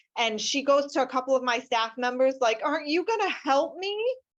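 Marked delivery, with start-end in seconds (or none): 2.7-4.2 put-on tearful crying voice, higher. Retelling a crying woman asking staff for help: imitating someone crying. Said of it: "bawling her eyes out".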